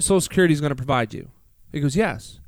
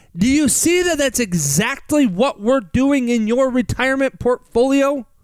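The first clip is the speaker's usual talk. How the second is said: drawn-out, emphatic yell; 7 semitones higher than usual. Retelling what was said to a client, reenacting own loud excited speech. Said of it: "Do you yell at people like this".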